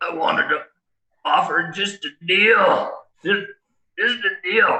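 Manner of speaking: put-on high, halting, choked wheezing voice. Narrating a choking character's words, wheezing like an asthmatic. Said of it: "he's wheezing like an asthmatic in an attack".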